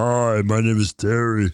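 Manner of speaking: very deep voice, pitched right down. Retelling a scene where a woman walks up and introduces herself, in Terry's very deep voice. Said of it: "Has a very deep voice".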